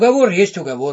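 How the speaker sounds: plain reading voice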